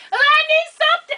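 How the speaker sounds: put-on shrill, very high-pitched screaming. Retelling calling the doctor in labor, imitating her own screaming. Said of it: "I called her and I was screaming".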